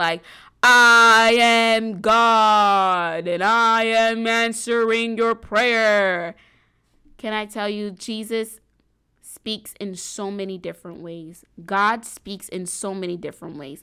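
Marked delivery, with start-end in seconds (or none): 0.6-6.3 very loud, very slow, booming proclaiming voice. Mocking the idea that God has one specific voice, demonstrate it: cathedral-church God voice. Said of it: "like a cathedral church type of voice".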